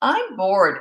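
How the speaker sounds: put-on snotty whining voice. Retelling what he said at a friend's house, imitating a snotty whine. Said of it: "like real snotty tone of voice, whining".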